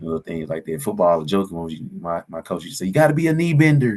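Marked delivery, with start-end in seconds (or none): 2.9-4.0 put-on pitched-up southern country accent. Retelling what a football coach used to say, in a southern country accent. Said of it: "He said in his southern country accent".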